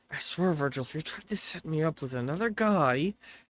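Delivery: muttered under breath. Walking away from Joel, a woman mutters to Virgil under her breath. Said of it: "starts to walk away under her breath".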